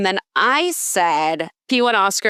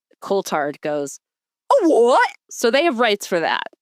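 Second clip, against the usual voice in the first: plain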